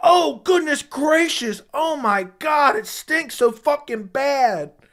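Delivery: mock very slow, drawn-out, high, top-of-lungs scream. Retelling a coworker's reaction to a smelly stall: imitating someone screaming. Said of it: "he was screaming at the top of his lungs".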